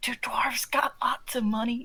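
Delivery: hushed, leaning-in whisper to the side. A player's character leans over to a companion to ask something: whispering. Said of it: "lean over to Gareth and whisper like".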